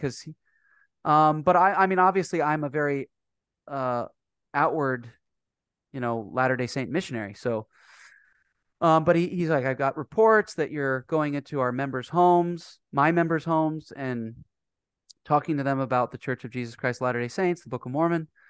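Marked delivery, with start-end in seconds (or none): none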